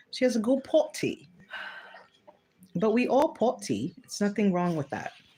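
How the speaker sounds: put-on, affected English accent. Speaking to the audience as 'y'all', in a put-on english accent. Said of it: "Got my English accent going on".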